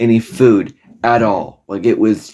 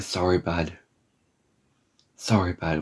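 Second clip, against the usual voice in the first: tender, very gentle, soft and low; 4 semitones lower, 12 dB quieter than usual. Retell a doctor's answer to your request in the middle of the night, imitating a very gentle tone. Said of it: "Like in a very, very gentle way".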